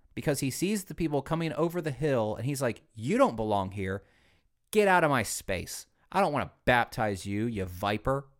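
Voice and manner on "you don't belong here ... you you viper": irritated, ticked-off, angry telling-off tone. Retelling how John rebukes the people coming over the hill: imitating an angry John the Baptist. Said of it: "John's ticked".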